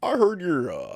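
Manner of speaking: sing-song, broken-up delivery, stalling between words. Doing an impression of a politician in a mock debate, on request: Obama impression. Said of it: "do Obama debating R F K".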